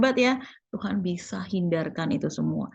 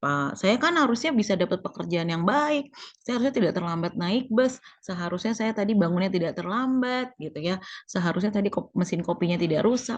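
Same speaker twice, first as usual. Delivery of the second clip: ordinary talk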